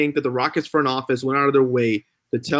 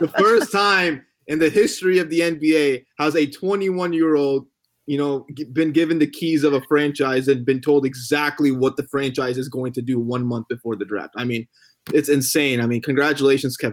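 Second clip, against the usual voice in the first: ordinary talk, nothing marked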